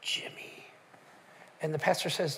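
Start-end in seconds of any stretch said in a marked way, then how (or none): 0.0-0.6 very quiet, small, tiny, breathy hushed whisper. Retelling a child answering the phone: imitating a whisper. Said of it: "this little whisper says".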